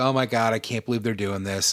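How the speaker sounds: acted complaining, whiny tone. Retelling how the son complained about new game skins: imitating son complaining. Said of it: "I listened to him complain about it".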